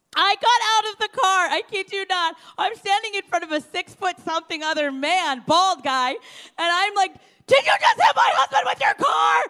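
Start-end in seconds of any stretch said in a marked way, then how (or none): 7.5-9.5 mock very high, loud, panicked, freaked-out tone. Retelling confronting a driver who hit the speaker's husband, retelling freaking out. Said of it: "I'm just like freaking out".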